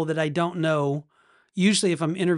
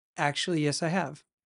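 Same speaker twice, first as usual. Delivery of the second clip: put-on serious tone, quieter; 6 dB quieter than usual. Retelling a doctor's answer about seeing a ghost: imitating a serious reply. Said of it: "real serious all of a sudden".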